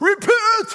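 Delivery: loud, high-pitched, proclaiming cry. Acting out a prophet calling a crowd: John the Baptist voice. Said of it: "That's my best version of John the Baptist".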